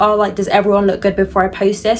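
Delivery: ordinary talk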